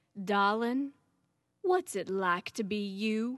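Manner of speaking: very Southern American speech. Quoting what dad would lean in and say, in a southern accent. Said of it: "he would say in his very Southern accent".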